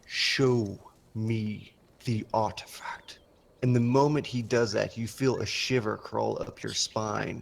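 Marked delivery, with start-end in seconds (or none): 0.1-3.2 authoritative, slow delivery. Game master voicing a one-eyed figure commanding a player's character, commanding. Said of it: "He looks at you and his his single eye flashes with arcane light as he gives you the command, / He looks at you and his his single eye flashes with arcane light as he gives you the command".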